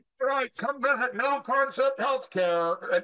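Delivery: shouting. Speaker shows how to get a business name out by running outside: yelling. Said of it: "why are you yelling at me?".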